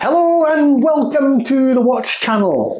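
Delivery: very high, really bad Scottish accent. Welcoming people to the watch channel in a bad scottish accent. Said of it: "that's a really bad Scottish accent".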